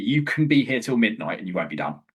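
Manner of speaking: usual speaking voice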